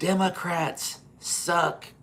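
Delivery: acted enraged yell. Retelling what an enraged guy on the riverfront yelled: imitating someone yelling. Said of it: "he yelled at the top of his lungs".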